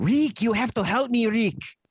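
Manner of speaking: put-on very high-pitched old-movie noir-style character voice. Discussing The Maltese Falcon and his speech at the end, do a Peter Lorre impression. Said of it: "my Peter Lorre".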